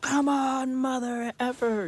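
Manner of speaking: put-on very high, stretched, challenging, drawn-out shout. Retelling beating the brush with his hat to drive it off, retelling a scream. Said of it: "screaming at it like".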